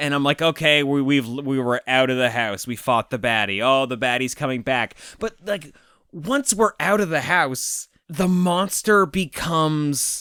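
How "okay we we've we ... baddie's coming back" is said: usual speaking voice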